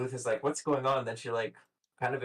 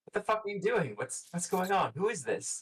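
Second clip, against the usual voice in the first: high, furious, angry half-yelling; 8 semitones higher than usual. Voicing Mel confronting her boyfriend with another woman: yelling angrily. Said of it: "like kinda yelling at him".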